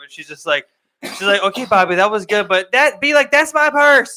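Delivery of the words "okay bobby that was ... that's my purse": loud, high woman's voice. Retelling a cartoon episode, quoting the lady: imitating the lady's voice. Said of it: "that girl's voice, that lady's voice".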